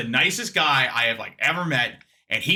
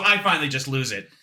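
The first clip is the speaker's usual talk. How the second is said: usual speaking voice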